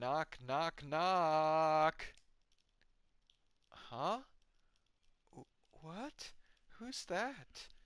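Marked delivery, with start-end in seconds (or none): 0.0-2.1 shouted, much louder. Someone at the door shouts instead of knocking, shouting knock knock. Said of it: "who shouts knock knock instead of knocking?".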